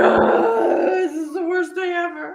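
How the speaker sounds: put-on high, slow, loud bawling. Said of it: "bawling like".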